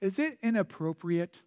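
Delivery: put-on small, soft six-year-old girl voice. Quoting a six-year-old girl's question, little six-year-old girl voice. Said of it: "in her little six-year-old voice".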